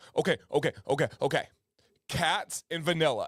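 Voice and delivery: put-on earnest, grave, dead serious young child voice. Retelling how Violet answered a question game: imitating Violet getting real serious. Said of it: "She gets, like, real serious about stuff".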